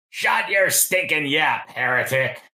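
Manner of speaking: hostile, nasty, heckling cry. Voicing a creature interrupting a funeral from the river: ugly shout. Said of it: "There's an ugly shout from the riverside".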